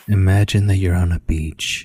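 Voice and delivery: mock-soothing calming voice. Describing meditations, the speaker imitates what they say in a really relaxing voice. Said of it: "in this really hella re- relaxing voice".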